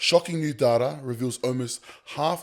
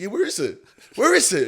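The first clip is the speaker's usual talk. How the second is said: put-on keen, eager, excited voice, pitched up; 7 semitones higher, 4 dB louder than usual. Retelling own reply to a friend's invite to an Airbnb: imitating own excited reply. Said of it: "You know, excited".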